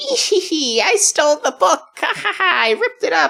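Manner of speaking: squeaky, very high, put-on old lady cackle. Retelling how a game starts: imitating an old lady. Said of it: "this old lady that says".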